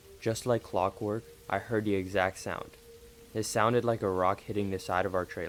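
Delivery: plain reading voice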